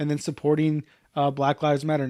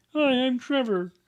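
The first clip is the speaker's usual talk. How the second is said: full, high-pitched put-on frog puppet voice; 9 semitones higher than usual. Joking about approaching a girl: Kermit voice. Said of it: "just do a Kermit voice randomly".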